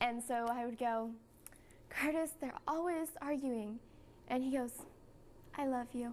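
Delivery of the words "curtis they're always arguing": put-on upset, higher. Recounting a scene with curtis, repeating her own line, retelling trying to sound upset. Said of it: "I'm trying to be like really upset".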